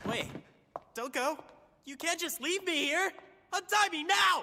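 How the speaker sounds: very high, shrill, loud yelling. Tied-up captive calling after the woman leaving him, yelling. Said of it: "I'll stop yelling".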